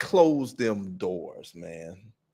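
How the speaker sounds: acted-out very slow, worn-out, fed-up tone. Retelling what a man in a clip said: imitating a fed-up man. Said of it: "my man fed up".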